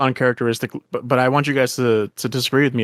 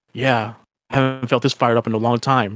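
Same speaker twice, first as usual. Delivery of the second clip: put-on flat voice. Recapping a scene in conversation, imitating Trunks's deadpan delivery. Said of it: "like no interest in the world".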